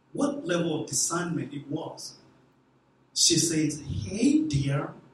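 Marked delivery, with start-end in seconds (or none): 3.8-4.8 very slow, deliberate, carefully spaced words. Retelling a woman's greeting to someone who barely spoke English, speaking very slowly. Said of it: "speaking very slowly".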